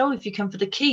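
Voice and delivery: put-on French accent. Retelling what a lady said at the door: imitating a French-sounding accent. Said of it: "in this lovely accent, you know, sort of French sounding accent".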